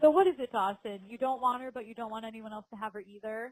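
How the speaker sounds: plain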